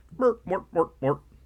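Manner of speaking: high, Swedish-sounding cartoon chef gibberish voice. Joking about sounding like a TV chef: Swedish Chef voice. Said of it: "or the Swedish chef".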